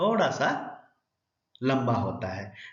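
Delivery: stress on थोड़ा, pause before लंबा.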